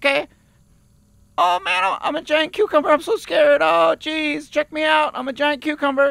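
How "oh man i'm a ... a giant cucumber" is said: slightly scared, a touch more frightened voice. Auditioning as a giant cucumber, asked to sound a little scareder. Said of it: "Can you be a little scareder?".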